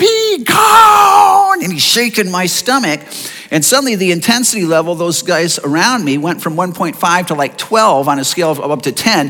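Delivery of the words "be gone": loud, very high, shrill, drawn-out scream. Retelling a man praying over him who suddenly cries out, retelling a loud scream. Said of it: "he screams out with a loud voice".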